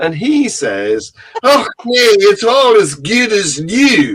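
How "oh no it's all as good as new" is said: loud, slow put-on Scottish accent. Telling a joke, voicing the Scotsman's punchline in a put-on Scottish accent. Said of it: "I'm sorry about the accent, by the way, Scots people".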